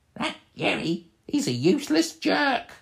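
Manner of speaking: very high, small goblin voice. Voicing one goblin speaking to the other, in a goblin voice. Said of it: "And they're talking in goblin talk".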